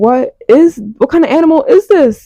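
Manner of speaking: mock frightened, high, startled shriek. Retelling an animal jumping into the room at night: retelling own screaming. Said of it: "so I'm screaming".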